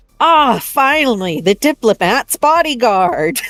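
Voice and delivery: said loudly, like an announcement. Voicing a character covering for a newcomer in front of guards: said loudly out loud. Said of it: "out loud, loudly be like".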